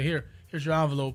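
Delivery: normal talking voice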